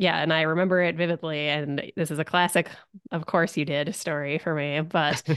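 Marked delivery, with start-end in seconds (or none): none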